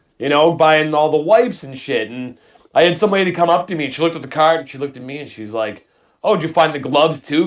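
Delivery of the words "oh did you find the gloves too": mock sarcastic delivery. Retelling what a lady asked while shopping: imitating someone sarcastic. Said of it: "Kinda, like, sarcastically".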